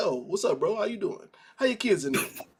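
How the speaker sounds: mock nonchalant, easygoing, breezy casual tone. Retelling a scene where Franklin strolls in casually: Franklin, mock casual greeting. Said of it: "and he's just like".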